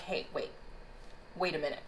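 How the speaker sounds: soft, low, overwhelmed pleading tone.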